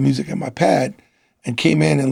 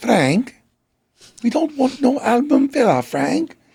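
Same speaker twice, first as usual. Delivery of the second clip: very high, put-on English accent; 10 semitones higher than usual. Retell what Gemma Corfield of Virgin Records told Frank in her office, in Gemma Corfield's English accent. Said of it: "With her English accent".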